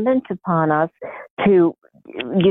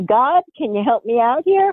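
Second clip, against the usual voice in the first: play-acted, lighthearted, half-serious pleading, pitched up; 6 semitones higher than usual. Speaker retells asking god for help with his eyes, retelling a joking plea. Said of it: "so I was jokingly".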